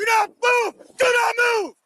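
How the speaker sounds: hollering, pitched very high. Ordering a woman who is pulling off to stay right there, hollering orders.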